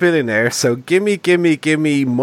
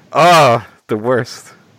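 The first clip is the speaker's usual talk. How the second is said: ordinary talk, nothing marked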